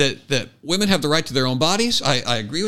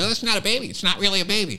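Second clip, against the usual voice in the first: put-on sarcastic mockery, higher and faster; 3 semitones higher, 3 dB quieter than usual. Retelling how a man makes fun of people, retelling a mocking, sarcastic line. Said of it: "he's very mocking. He's very sarcastic".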